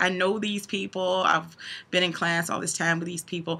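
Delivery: play-acted words coming out through tears. Retelling own words at a class graduation: imitating own crying. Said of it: "I was crying because I was like".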